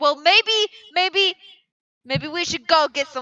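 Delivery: very aggressive. Answering a kid in character in a tabletop game: very aggressive. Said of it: "That was very aggressive".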